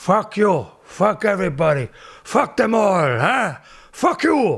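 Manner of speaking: loud, slow movie gangster voice. Retelling an old stand-up bit: Al Pacino as Scarface impression. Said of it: "I'd just do an impression of Scarface".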